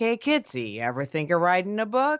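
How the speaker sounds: put-on swooping New York accent. Retelling how your dear friend brought up writing a book, as Dave Schrader with a New York accent. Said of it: "I don't know why he has a New York accent".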